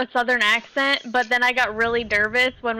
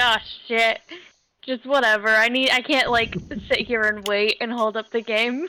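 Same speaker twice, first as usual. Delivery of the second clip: plain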